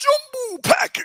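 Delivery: mock very high, hyped-up, excited yell. Answering what Ray Kennedy says when Vita Vea comes in: imitating Ray Kennedy's loud shout. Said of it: "he says it so loud".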